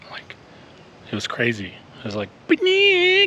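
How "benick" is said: very high, odd hollering machine voice. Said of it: "somebody was hollering at me".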